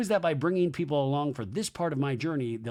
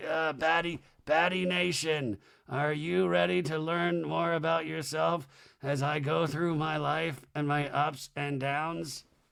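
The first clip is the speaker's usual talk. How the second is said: slow voice of a man in his eighties. Imagining hosting a docu-series in his eighties, the speaker does an old man voice. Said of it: "that's what I'm going to sound like as an old man".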